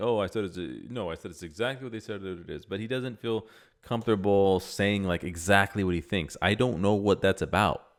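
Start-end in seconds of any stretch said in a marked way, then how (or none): 0.0-2.6 ironic, sarcastic delivery. Retelling another speaker's sarcastic answer: imitating Sneako being sarcastic. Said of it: "Sneako feels comfortable being sarcastic about it".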